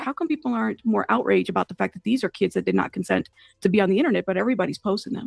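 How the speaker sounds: normal talking voice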